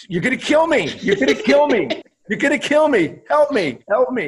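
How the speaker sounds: high-pitched, loud, panicked screaming. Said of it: "Sergei Fedorov screaming".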